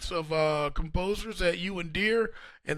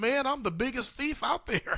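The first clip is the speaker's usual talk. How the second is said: put-on Oklahoma accent, pitched up; 6 semitones higher than usual. Retelling advice from composer James Barnes in his Oklahoma accent. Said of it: "that Oklahoma accent of his".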